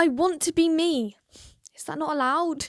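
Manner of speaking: theatrical acted delivery. Reading a line aloud in a group game, acting the line out. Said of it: "I'm acting".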